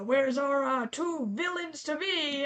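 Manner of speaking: loud, gruff, fatherly voice, barked out. Narrating a game, voicing the player's father as he kicks open the door: gruff Frederick Fingal voice. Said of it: "you hear kind of a gruff voice".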